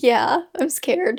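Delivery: voice cracking and breaking on the words. Asked if ready to start, admitting being scared, voice cracking. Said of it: "My voice just cracked".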